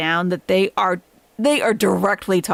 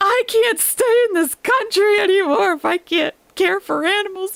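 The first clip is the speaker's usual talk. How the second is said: upset, very emotional and very high-pitched; 12 semitones higher than usual. Retelling a woman he was sniping on live getting emotional: mock-emotional, upset. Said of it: "she's getting all emotional and saying".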